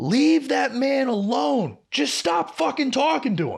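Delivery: put-on sudden, abrupt, high yell. Retelling a coworker who suddenly starts yelling: imitating someone yelling. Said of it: "just starts yelling".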